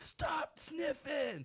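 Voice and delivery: very high, raging scream. Speaker acts out their younger brother as kids: imitating brother's screaming rage. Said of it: "screaming rage".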